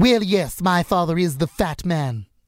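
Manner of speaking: cartoonish baby character voice. Performer showing off over 100 voices on a podcast, in Stewie Griffin's voice. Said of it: "Stewie Griffin".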